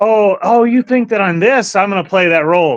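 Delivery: play-acted sarcastic tone. Retelling own past reactions to accusations: imitating own past sarcasm. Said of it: "sarcasm is my biggest thing".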